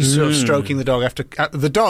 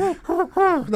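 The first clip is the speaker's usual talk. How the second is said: very high, needy, pigeon-like dog voice. Describing how a dog reacts when kicked, pigeon-like dog impression. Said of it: "That's quite pigeony, that dog".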